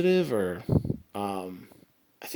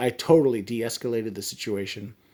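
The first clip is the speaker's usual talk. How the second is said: ordinary talk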